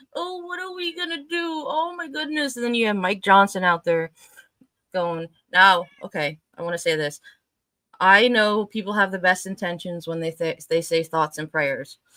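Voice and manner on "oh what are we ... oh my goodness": very high, whimpering, crying, wailing whine. Mocking officials who cut safety programs: imitating someone crying. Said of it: "now you're there crying like".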